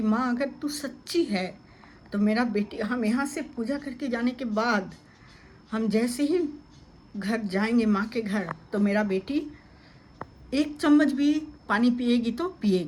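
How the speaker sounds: plain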